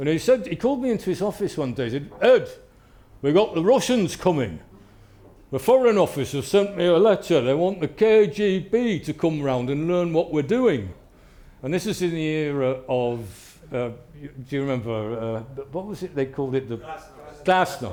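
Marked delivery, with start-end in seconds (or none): 2.2-10.9 put-on blunt, no-nonsense Yorkshire accent. Recalling when Martin called him into his office, speaker quotes him in Martin's Yorkshire accent. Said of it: "And he talked like this".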